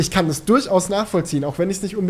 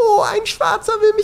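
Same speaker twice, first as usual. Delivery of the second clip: fake crying fit, very high pitched; 4 dB louder than usual. Describing a video where a woman phones the police, imitating a staged crying fit. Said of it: "inszeniert einen Heulkrampf und heult den Polizisten am Telefon vor".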